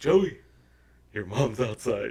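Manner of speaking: loud voice, words broken up by laughter. Retelling how a friend warned him his mom was outside: imitating laughing while talking.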